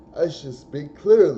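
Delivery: mock announcer voice, loud, high, crisp and over-clear.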